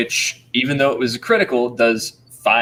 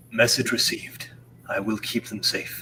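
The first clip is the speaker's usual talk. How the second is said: whispered, breathy put-on character voice; 2 semitones lower, 8 dB quieter than usual. Voicing a character sending a message the party hears: perfect Kasha voice. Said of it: "perfect Kasha voice".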